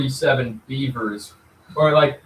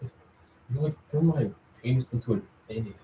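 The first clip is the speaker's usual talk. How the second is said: put-on cartoon teen voice, quieter; 9 dB quieter than usual. Retelling a friend's joke about elderly people at competition: Butt-Head impression. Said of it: "he's doing, like, a butthead impression".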